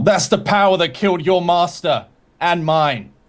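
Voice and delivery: high-pitched put-on yell. Playing a character pointing at a foe: yelling in character. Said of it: "and I yell".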